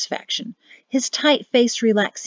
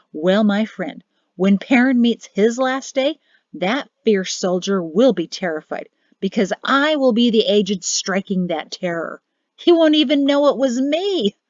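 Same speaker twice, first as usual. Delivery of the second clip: scornful, vengeful, gloating villain's sneer. Speaking to his friend about Perrin's last day, sneering. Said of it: "[name] nodded once in satisfaction, / [name] sneered when he received no response".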